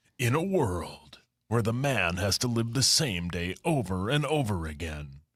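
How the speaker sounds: deep-toned movie trailer announcer voice. Doing a Groundhog Day trailer on request: movie trailer voiceover voice. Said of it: "Pretend you're a movie trailer guy".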